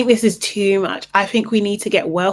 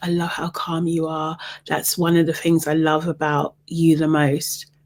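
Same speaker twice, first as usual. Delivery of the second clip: hushed, low half-whisper, confiding tone; 4 semitones lower, 3 dB quieter than usual. Retelling a moment at a table of eight, imitating Huda half-whispering. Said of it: "she's whispering now".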